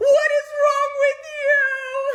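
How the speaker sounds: very high-pitched, slow, loud crying scream. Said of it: "I'm literally going crazy".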